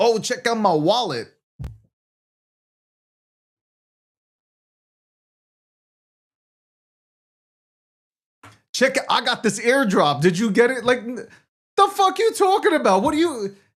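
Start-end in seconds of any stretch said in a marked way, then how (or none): 0.0-10.8 would-be slick, smooth, flirty come-on voice. Imitating guys in the industry trying to hit on women: imitating guys hitting on women. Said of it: "they think they're macking".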